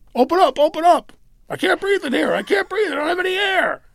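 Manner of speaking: high, loud, desperate pleading.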